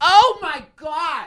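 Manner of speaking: put-on, very high-pitched, irritated, exasperated outburst. Retelling how an annoyed old man at another table turned around, imitating an annoyed old man. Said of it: "who's been getting annoyed slowly yet surely".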